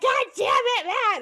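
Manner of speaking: mock, very high, loud sobbing, crying yell. Retelling yelling at the dog while sobbing: retelling own angry yell. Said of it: "I'm, like, yelling at him".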